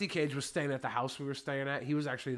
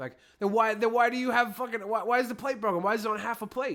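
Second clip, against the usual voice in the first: usual speaking voice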